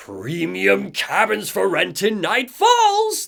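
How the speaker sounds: high, drawn-out monster shout. Retelling a game scene where the creature pulls its axe out: Carl Stucky monster shout. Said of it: "The figure shouts".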